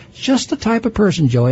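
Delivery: plainly sarcastic, ironic, jabbing tone. Speaker addressing a listener mid-argument: sarcastic. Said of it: "I'm being sarcastic now".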